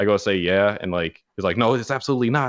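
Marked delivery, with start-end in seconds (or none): 1.6-2.5 mock-angry voice, higher pitch. Retelling how a man checking your ID reacted, retelling a mad grilling. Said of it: "like real mad, grilling".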